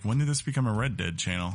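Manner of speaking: usual speaking voice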